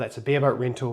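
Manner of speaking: ordinary talk, nothing marked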